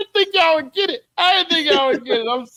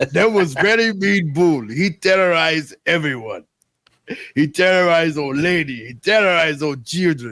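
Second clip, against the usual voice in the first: very low, deep voice like a wise sensei; 9 semitones lower than usual. Trading voice impressions, the speaker narrates a story; Mr. Miyagi impression. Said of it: "Mister Miyagi".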